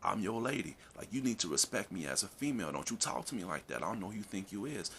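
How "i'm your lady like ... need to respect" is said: ordinary delivery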